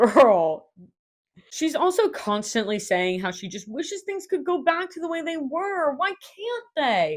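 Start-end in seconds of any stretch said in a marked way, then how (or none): 5.9-7.2 put-on whiny childish tantrum voice. Imitating a woman who keeps asking why, mock whiny like a kid's fit. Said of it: "she is saying it like that, like a kid throwing a fit".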